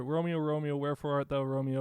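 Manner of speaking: rushed run-on delivery with no pauses. Showing an actor delivering monologue lines with no space: rushed, no pauses. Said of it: "sentence, sentence, sentence, sentence with no space, just like".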